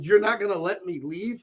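ordinary talk

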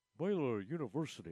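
put-on cool, pleasant, not over-the-top show voice. Contrasting how Frank said it with Coach Taft: imitating Frank's cool pleasant voice. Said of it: "Frank would have been more like".

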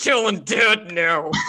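high, slow, tearful and furious crying wail. Imitating Jairus crying after being punched in a fight, crying rage voice. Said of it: "crying rage voice".

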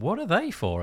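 put-on, very high, half-mocking, almost teasing tone. Retelling her question to some very persuasive people, an almost mocking question. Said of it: "I kind of almost mockingly said".

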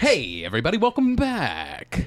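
put-on radio announcer voice, drawn out. Opening a recording with a welcome, radio announcer voice. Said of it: "That's my radio voice".

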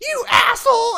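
very high, shrill, very loud full-lung scream. Telling a bowling story, acting out a lady in the group: retelling a lady screaming. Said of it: "just screams".

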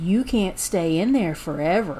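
hushed, very creepy, sinister voice. Retelling how one of the guys spoke through the mail slot: retelling a creepy voice. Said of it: "in the creepiest voice said".

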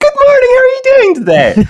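shrill sing-song, extremely high and loud. Describing a woman who walks in at school each morning, mimicking her extremely high voice. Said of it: "saying in her extremely high voice".

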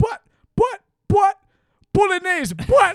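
put-on Jamaican accent. Retelling how Sean talked on the second night, in Sean's put-on Jamaican accent. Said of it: "he was talking in a Jamaican accent".

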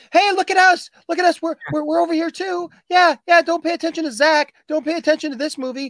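very high-pitched, tiny, small voice. Mocking a release nobody knew about, imitating a little voice. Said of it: "this little voice over here that's going".

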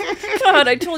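very loud, shrill, dragged-out high yelling. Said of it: "started yelling at me".

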